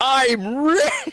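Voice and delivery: very high, shrill, screamed-out shout. Playing a character who finds platinum coins in a library: screaming in character. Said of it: "As I scream it out in the library".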